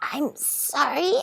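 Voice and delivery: hoarse, rasping voice. Reading a story, voicing the unseen speaker who was watching: rasping voice. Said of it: "said a rasping voice".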